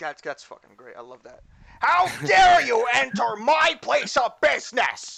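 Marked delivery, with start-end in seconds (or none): 1.8-5.2 shrill, very loud, high, slow, drawn out. Voicing a bird character who sounds like Gilbert Gottfried. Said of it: "Poyo sounds like Gilbert Godfrey".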